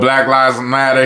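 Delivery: ordinary talk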